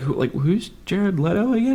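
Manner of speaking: high, puzzled, confused, clueless voice.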